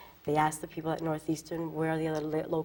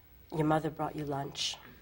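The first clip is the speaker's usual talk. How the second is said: put-on deadpan delivery. Retelling the father's reply after the speaker yelled at the parents, deadpan. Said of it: "in a very deadpan, um, his deadpan, you know, way".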